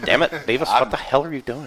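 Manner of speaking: put-on low cartoonish teenage voice. Showing the others an easy Butthead voice, Butthead voice. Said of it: "so Butthead's easy".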